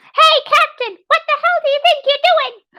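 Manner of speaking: squeaky little voice, way up high. Imagining Root scolding Captain Short, squeaky Root voice. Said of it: "the squeaky nonsense of".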